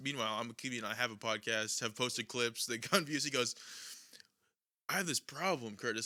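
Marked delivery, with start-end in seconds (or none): 4.9-6.1 put-on giddy bragging voice. Retelling how a coworker bragged about a viral clip: imitating Ross's giddy bragging. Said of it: "he literally said it like this".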